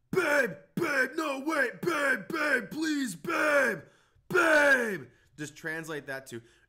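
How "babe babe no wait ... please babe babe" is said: very high, very loud, shrill, slow drawn-out yelling. Showing how the boyfriend in Hot Rod yelled at his girlfriend, imitating the Hot Rod boyfriend yelling. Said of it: "that was yelling like".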